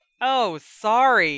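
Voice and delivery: high, very loud shouting right back. Ron answering Jenny after she snaps at him, yelled back. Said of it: "Ron yelled back".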